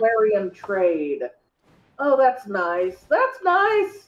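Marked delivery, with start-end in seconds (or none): 2.0-3.9 dry sarcastic tone. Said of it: "I'm being sarcastic".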